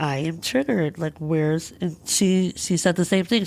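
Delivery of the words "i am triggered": tearful voice cracking mid-line. Retelling what they said when someone stopped and looked at them, reenacting voice cracking. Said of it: "I crack as I say it".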